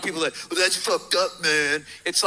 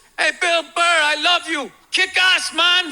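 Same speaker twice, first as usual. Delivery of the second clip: mock, very high, drawn-out holler; 11 semitones higher, 5 dB louder than usual. Retelling a man in the crowd calling out before the set: imitating a guy yelling. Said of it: "this guy yells out".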